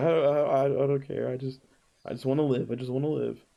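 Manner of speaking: slow, halting whimper, stumbling over words. Voicing a captured prisoner begging to be spared: whimpering in character. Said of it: "he's just whimpering".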